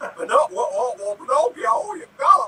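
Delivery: put-on high, loud, cracking old-fashioned drawl. Mocking an actor's voice in a Pinocchio film: cracking Jimmy Stewart drawl. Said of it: "it's almost like a cross of a person in puberty and Jimmy Stewart".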